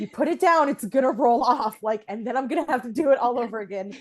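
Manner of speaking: play-acted exasperated, frustrated, fed-up tone. Recalling a scene where an object keeps rolling off, imitating a frustrated voice. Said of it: "you could hear the frustration of".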